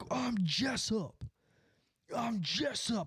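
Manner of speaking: put-on angry, high, slow, drawn-out outburst. Retelling how an angry driver kept repeating his name: imitating an angry man. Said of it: "that guy got so mad".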